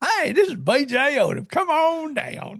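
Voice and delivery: put-on folksy country accent, high, slow, drawled. Joking about doing a voice, speaker says a greeting in a put-on country accent. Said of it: "I guess I could do that voice and say".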